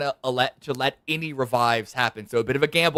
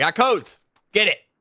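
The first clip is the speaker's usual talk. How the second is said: shouting, higher and louder; 6 semitones higher, 4 dB louder than usual. Alerting viewers looking away from their screens that codes dropped: yelling. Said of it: "I'm yelling it".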